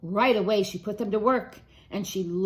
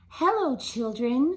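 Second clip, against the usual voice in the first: sweet, sweetly spoken storybook voice; 4 semitones higher than usual. Reading a story aloud, someone greets the discouraged children in a sweet voice. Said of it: "someone said in a sweet voice".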